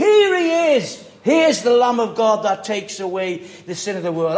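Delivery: joyful, excited shout with swinging pitch. Picturing a crowd where someone suddenly announces Jesus: imitating an excited shout. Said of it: "suddenly John shouts out".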